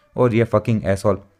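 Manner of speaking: plain reading voice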